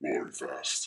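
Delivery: imitated deep voice. Retelling a burly coach asking about football: imitating the coach's deep voice. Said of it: "he's got this deep voice".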